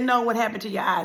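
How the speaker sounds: ordinary talk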